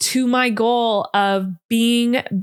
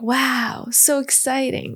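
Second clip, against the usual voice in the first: put-on small child voice; 3 dB quieter than usual. Imagining their younger self seeing them now, in a little-kid voice of younger self. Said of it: "that's my little [name] voice".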